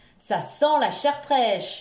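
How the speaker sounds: loud, big, booming, roaring ogre bellow. A narrator reads the ogre coming home and yelling, in his big voice. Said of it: "hurla l'ogre de sa grosse voix".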